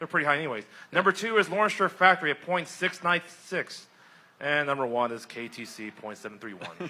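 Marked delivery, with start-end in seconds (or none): 4.4-6.9 slow delivery, voice sinking and falling away. Announcing the number one team in the standings, falling voice. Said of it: "Your voices fall so much there".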